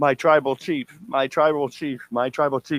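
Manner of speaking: blubbering, tearful, sobbing through the words. Retelling a scene where the man takes his hands away crying: mock crying as Paul Heyman. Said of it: "he takes his away and he's crying".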